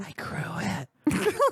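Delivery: secretive hushed whisper, up close. Voicing a character who leans close to share a secret: whispering a secret. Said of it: "she whispers into your ear".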